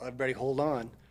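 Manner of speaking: loud, yelled-out delivery. Telling a family story, imitating Dad coming down a rapid: retelling Dad's yell. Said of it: "he yells out".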